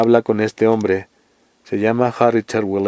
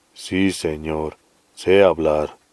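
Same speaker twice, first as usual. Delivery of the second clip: grave, serene, deep, slow and steady; 6 semitones lower than usual. Narrator voicing the big new charge answering whether he can talk: Coffee's deep, calm booming voice. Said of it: "con un vozarrón grave y sereno".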